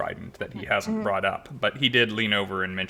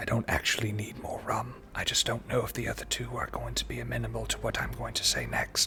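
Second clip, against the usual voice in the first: hushed whisper, quieter; 2 semitones higher, 5 dB quieter than usual. Voicing a character who leans over and tells a player a secret: whispering. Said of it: "he leans over to you and whispers in your ear".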